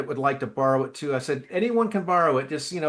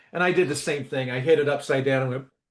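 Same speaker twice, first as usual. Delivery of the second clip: plain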